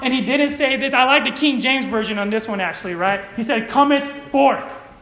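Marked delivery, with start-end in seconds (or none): 3.7-4.7 acted, forceful, no-arguing, aggressive tone, pitched up. Preaching, quoting Jesus's command to Lazarus: aggressive command. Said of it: "That sounds a little more aggressive".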